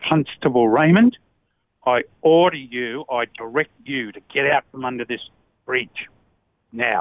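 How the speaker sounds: put-on forceful, intense whisper. Retelling a sergeant's order under a bridge: retelling a forceful whisper. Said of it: "he whispered in my ear with force".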